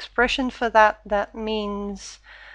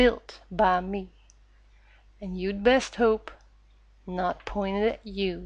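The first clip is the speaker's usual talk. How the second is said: imitated, put-on Texan accent; 3 dB quieter than usual. Gamer trying out a favorite character's lines: Team Fortress 2 Engineer voice. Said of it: "imitation of a Texan accent".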